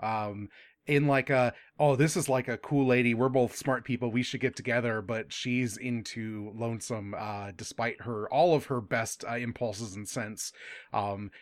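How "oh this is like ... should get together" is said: ordinary talk, nothing marked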